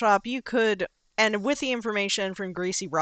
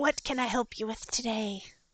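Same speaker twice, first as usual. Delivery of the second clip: put-on very soft, sweet little old lady voice; 3 semitones higher, 10 dB quieter than usual. Game narrator voices the little old lady behind the counter, sweet little old lady voice. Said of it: "sweetest little old lady behind the counter".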